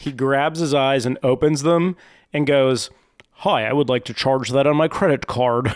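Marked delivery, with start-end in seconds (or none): 3.3-5.7 mock, put-on American accent. Retelling a video of someone doing an accent: put-on american accent. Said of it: "Say something like an American".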